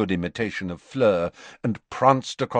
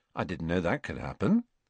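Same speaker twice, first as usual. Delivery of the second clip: plain reading voice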